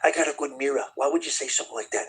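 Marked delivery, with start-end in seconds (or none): 0.0-0.8 put-on New York accent. Repeating his line the way he says it: New York accent. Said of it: "In his like New York accent".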